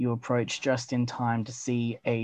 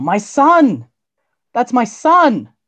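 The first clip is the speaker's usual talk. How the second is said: shrill, high, swooping, booming, full-throated, drawn-out yell; 12 semitones higher, 14 dB louder than usual. Narrator voicing a mother as the gate closes, yelling. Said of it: "you hear her yell".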